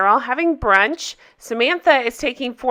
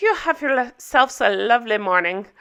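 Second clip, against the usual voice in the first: terrible, badly done put-on Irish accent; 3 dB quieter than usual. Quoting a woman who runs up to the guys, in a bad Irish accent. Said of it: "Irish accent".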